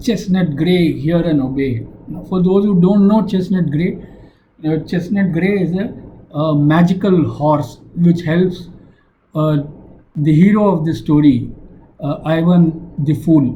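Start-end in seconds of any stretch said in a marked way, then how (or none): none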